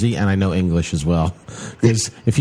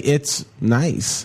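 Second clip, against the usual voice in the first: hesitant "it's nice", pause before "nice", higher; 5 semitones higher than usual. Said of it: "What was that time in between?".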